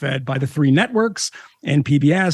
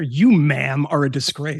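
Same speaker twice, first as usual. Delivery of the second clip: very slow, grave, weighty delivery, word by word. Teasing another speaker over a hair opinion: Keith Olbermann impression. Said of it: "if I can do a Keith, Keith Olbermann impression here".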